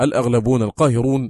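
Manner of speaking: usual speaking voice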